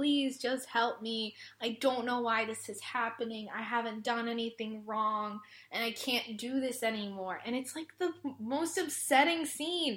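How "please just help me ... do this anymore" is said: put-on pleading tone, quieter. Retelling how a bullied character on the ground begs for help: imitating a character begging. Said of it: "gets on the ground in, like, that begging position".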